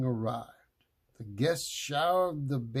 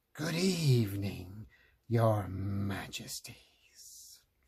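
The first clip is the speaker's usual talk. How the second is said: deep slow rasping throaty wicked fairy voice; 5 semitones lower than usual. Reading a fairy tale aloud, voicing the uninvited fairy: rasping deep throaty voice. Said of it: "she rasped in her deep, throaty voice".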